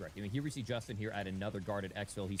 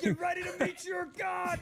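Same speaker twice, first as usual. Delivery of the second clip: very high, loud, shrieking scream; 7 dB louder than usual. Imitating a player heard screaming on voice chat: imitating Peanut screaming. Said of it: "him screaming at me like that".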